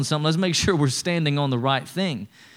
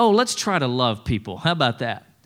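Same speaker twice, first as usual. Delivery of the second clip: wry, lightly sarcastic tone, acted; 3 semitones lower than usual. Retelling a scripture command as if said sarcastically: imitating a sarcastic remark. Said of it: "He's just kind of sarcastically saying".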